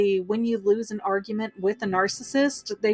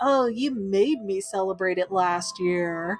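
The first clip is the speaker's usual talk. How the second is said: mock dismissive, put-upon, snippy attitude. Showing how Gothel talks about the birthday: imitating Gothel with attitude. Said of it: "when you say it with that kind of attitude".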